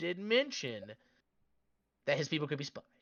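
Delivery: very quiet, hushed, under-the-breath voice. Speaking to a self-declared army commander so no one else can hear, very quiet. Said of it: "I'm saying this very quietly".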